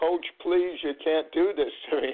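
mock crying, high-pitched, tearful voice. Retelling a player's plea to the coach: imitating someone crying. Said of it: "actually crying on my shoulder saying".

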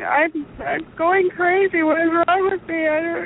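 very high, slow, sobbing, tearful bawling. Retelling telling a nurse about symptoms: imitating own past crying. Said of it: "bawling and crying, going".

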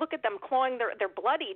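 ordinary delivery

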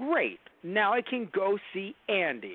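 very slow, drawn-out toy-cowboy voice with big swoops. Retelling what a toy says once his arm is back: Tom Hanks as Woody impression. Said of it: "was that a good impression?".

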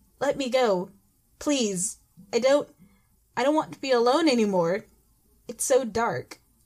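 meek, timid, slow voice. Narrator reads a man in cuffs speaking to the narrator; timid voice. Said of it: "In a timid voice".

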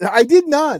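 very loud, high-pitched, over-insistent, defensive. Denying having fallen asleep while rewatching the movie: defensive. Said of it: "Why you have to sound so defensive?".

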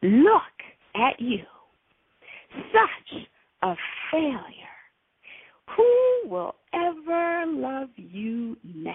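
play-acted angry, rasping, swooping, accusing demon voice. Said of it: "this angry, rasping, accusatory voice in my head".

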